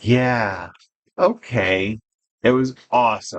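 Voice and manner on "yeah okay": mock worn-out, drained, weary tone. Retelling someone's reply to a bedtime-style story: imitating a tired voice. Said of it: "in his tired voice".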